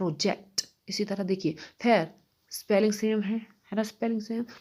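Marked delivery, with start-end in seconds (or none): 0.0-0.7 project with weight on second syllable -ject. Hindi lesson on same-spelling english words: stress on second syllable ject. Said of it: "second syllable पर ये stress देना होता है".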